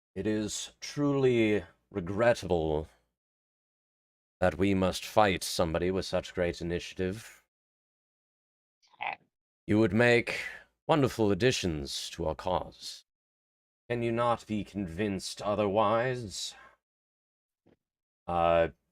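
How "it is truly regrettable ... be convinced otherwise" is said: theatrical, grandiose, unnatural orator's voice. Narrator voices a sequin-costumed figure addressing his opponents, booming unnaturally loud. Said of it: "his voice is booming unnaturally loud".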